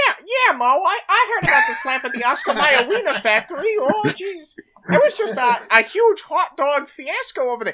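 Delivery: very high, squeaky, stammering slapstick voice. Doing an impression of the Three Stooges talking about the slap. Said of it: "Three Stooges impression".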